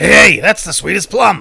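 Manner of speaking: cartoonish rough bellowing. Repeating an earlier phrase, the speaker does a Krusty the Clown voice. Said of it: "As Krusty the Clown would say, ... That was not a Krusty the Clown".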